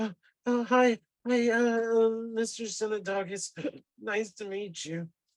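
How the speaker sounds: small, weak, high, whining little voice. A weak, trembling character meets Mister Synodogus, in a whiny little voice. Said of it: "he's got a whiny little voice".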